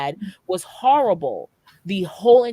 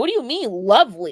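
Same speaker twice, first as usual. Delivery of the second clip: baffled, confused, puzzled tone. Retelling a woman's reaction to hearing it was lovely: imitating someone confused. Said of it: "she was confused".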